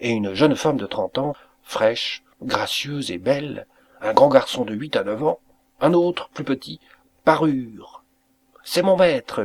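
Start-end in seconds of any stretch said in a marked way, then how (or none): 8.6-9.5 raised, pitched-up crying out. A man announces his old master's arrival to his family, crying out. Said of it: "cria Niklaus".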